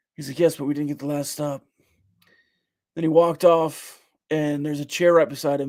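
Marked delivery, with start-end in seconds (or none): 0.4-1.7 mock calm tone, quieter. Quoting what he said after the game, retelling a calm reply. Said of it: "He actually said it really calmly".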